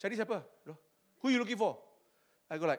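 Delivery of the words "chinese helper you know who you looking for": haughty, condescending, looking-down tone. Retelling a lift guard questioning the speaker: imitating a condescending guard. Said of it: "He's looking down on me".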